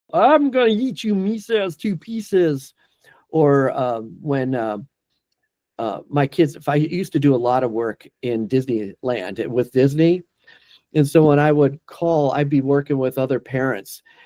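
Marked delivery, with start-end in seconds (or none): 0.1-2.7 put-on high-pitched cartoon storybook monster voice. Asked about doing voices as a dubbing artist, the speaker shows a cartoon voice. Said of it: "cartoon voices".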